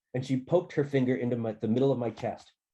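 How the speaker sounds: ordinary delivery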